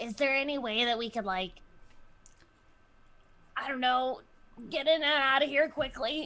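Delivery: stage whisper, high pitched. Player in character as Gwen, asking the group a question: Gwen's stage whisper. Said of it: "I'm whispering".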